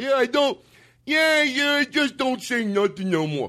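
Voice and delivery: high, dumb mock voice. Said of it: "you're putting a dumb voice on it".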